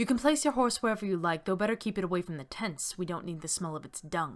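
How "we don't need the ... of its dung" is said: ordinary talk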